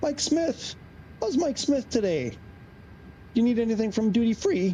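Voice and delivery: cracking, breaking voice. Greeting someone and asking a question, voice cracking. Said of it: "I don't know why my voice just cracked".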